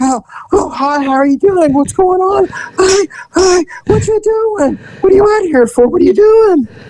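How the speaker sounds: anxious-sounding voice. Improvising a scene with a partner, playing the nervous Nelly voice. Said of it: "here's the nervous Nelly".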